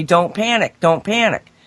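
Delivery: plain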